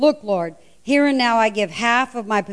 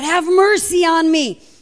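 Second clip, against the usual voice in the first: loud, high scream, slow and stretched out; 7 semitones higher, 5 dB louder than usual. Retelling the story of the blind man calling out to Jesus: imitating a blind man screaming. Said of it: "he just screams out".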